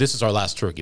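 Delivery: ordinary delivery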